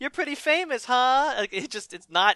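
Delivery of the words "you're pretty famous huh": mock cheerful upbeat voice, higher, like talking to a child. Retelling how a prisoner first greets Rorschach: imitating upbeat talk like to a kid. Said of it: "all upbeat".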